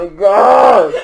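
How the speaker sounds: slow, loud, pained groaning cry.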